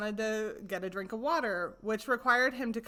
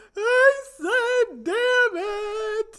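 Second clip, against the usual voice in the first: very slow, loud, stretched-out crying wail, pitched up; 12 semitones higher, 10 dB louder than usual. Recounting someone wailing the same words at the top of the stairs; imitating someone wailing. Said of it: "as he's wailing".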